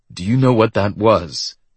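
ordinary delivery

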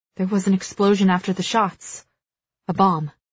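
plain

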